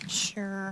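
quiet, unenthusiastic sure.

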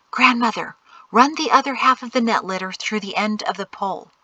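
plain

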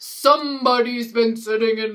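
ordinary delivery, nothing marked

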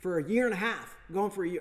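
yelling. Telling a story about making his pieces, yelling. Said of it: "I just yelled".

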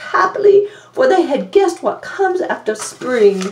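ordinary delivery

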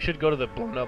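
voice cracking mid-sentence. Suggesting to a friend where to go next, voice cracking. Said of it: "Oh god, voice crack".

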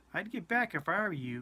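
cool, calm, unruffled, composed delivery. A man faces a big soldier who starts toward him, speaking coolly. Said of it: "he said coolly".

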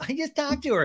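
mocking, pitched high. Recapping an argument, retelling Ariana mocking someone. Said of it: "Ariana mockingly goes".

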